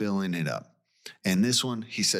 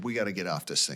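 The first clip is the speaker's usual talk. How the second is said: fast, frantic, hysterical panicked outburst; 3 dB quieter than usual. Retelling a woman on a sinking boat: imitating hysterical panic. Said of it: "She is hysterical, just starts freaking out".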